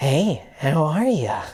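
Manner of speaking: low, unsettling, creepy voice. Describing a man who greets the speaker, imitating a creepy voice. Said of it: "It's just in the creepiest voice".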